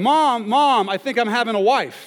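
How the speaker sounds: put-on child yelling, high-pitched and loud.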